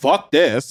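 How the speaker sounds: ordinary delivery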